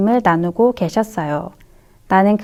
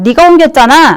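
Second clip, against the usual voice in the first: shouting, yelling, louder; 4 semitones higher, 8 dB louder than usual. Opposing players protest a disputed goal, shouting. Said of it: "상대팀도 외쳤어요".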